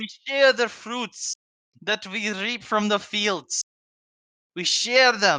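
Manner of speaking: bad put-on Russian accent. Riffing on Soviet Russia and sharing, in a horrible fake Russian accent. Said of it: "I'm doing a horrible accent".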